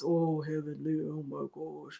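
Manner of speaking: slow, very soft, low pained grimacing murmur. Imitating an embarrassed Doctor Damon reacting to Heavenly: Doctor Damon's grimace voice. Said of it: "his own grimace voice".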